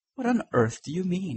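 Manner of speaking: sudden, high-pitched exclaiming voice. Responding to the other speaker, a man exclaims. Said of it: "exclaimed Huey".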